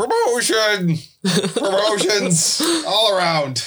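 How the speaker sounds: high, slow, cheering delivery.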